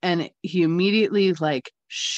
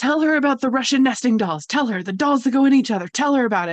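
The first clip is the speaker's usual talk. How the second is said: play-acted urgent, insistent, repeated yelling; 7 semitones higher, 4 dB louder than usual. Retelling what a client's Russian grandmother said to her, imitating a woman yelling. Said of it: "she's like yelling at me".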